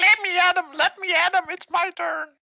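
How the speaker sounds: very high, tiny squeaky critter voices. Player voicing small animated objects after casting a spell: tiny little voices. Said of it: "With these tiny little voices".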